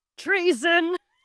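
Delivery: mock grand, stagey outburst. Retelling a movie scene where Grandpa objects to treason: imitating a theatrical outburst. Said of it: "he stands up and goes".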